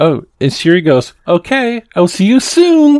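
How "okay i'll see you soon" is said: very high, slow sing-song, lifting at the end. Retelling how Siri read a text aloud: imitating Siri's sing-songy voice. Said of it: "lifted up her voice at the end".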